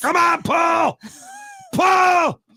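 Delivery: cheering shout.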